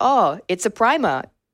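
attempted English accent, high and slow. Speaker retells what Josh said about the gym; Josh's line in English accent. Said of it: "I'm trying to do an English accent".

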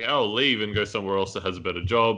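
ordinary talk

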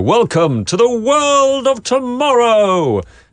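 high, slow, booming announcer voice. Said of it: "in Futurama they go".

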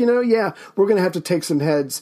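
normal talking voice

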